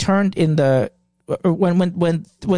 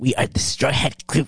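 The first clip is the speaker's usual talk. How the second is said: mock serious, oddly solemn, half funny; 3 semitones lower, 3 dB quieter than usual. Quoting a character's line about the Straw Hat Crew: mock-serious funny tone. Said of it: "He says it like that. Like, he gets all serious".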